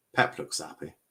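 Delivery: dry, ironic, sarcastic tone. Commenting on the match, saying a coach looks happy: sarcastic.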